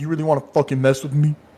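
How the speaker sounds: furious, angry, menacing tone. Voicing a dragonborn who slams the drink aside: angry threat. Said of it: "slams the drink to the side, like".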